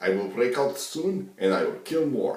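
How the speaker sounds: very loud, high, boastful put-on Mexican accent. Describing a defendant boasting in court, the speaker quotes him in a Mexican accent. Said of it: "in his Mexican accent".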